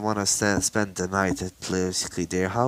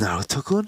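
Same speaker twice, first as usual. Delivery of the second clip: startled, caught-off-guard, surprised disbelief. Retelling a story where characters see naruto again: acting surprised.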